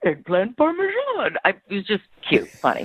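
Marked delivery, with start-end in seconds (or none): 0.0-1.4 bad put-on voice, very high and squeaky. Retelling how a date ordered dinner in a restaurant: Yoda voice. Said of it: "he actually did it in a Yoda voice".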